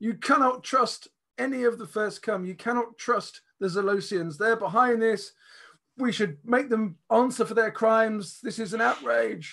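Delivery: mild, high-pitched, rabble-rousing rallying delivery. Player's character turns to face the crowd, shouting to the crowd. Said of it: "turn and face the crowd and shout".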